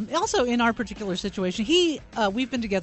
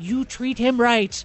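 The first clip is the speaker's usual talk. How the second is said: put-on mock tone, higher; 3 semitones higher, 4 dB louder than usual. Telling of first meeting his family, the speaker imitates the aunt's warning tone. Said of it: "With this tone in her voice of like".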